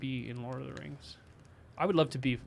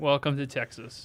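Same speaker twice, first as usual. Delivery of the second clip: usual speaking voice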